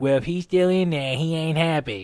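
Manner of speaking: loud, upright soldier-style military voice. Retelling the closet scene, imitating how Major Payne talks. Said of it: "And then he's like".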